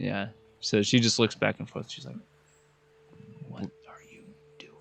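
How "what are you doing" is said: very hushed, barely voiced whisper. Voicing a woman who looks back and forth at the group, in a very hushed voice. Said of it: "In a very hus- hushed voice".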